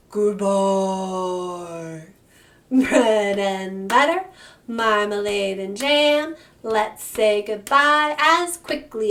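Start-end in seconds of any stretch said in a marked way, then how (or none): 0.1-2.0 as deep as possible, very low, drawn-out voice. In a bread-and-butter rhyme, saying goodbye as low as possible. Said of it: "as low as we can".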